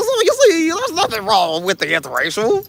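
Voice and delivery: lecturing tone with pitch swooping up and down. Turning a lecture on listeners, doing a Bill Cosby impression. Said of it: "I've been working on my Bill Cosby impersonation".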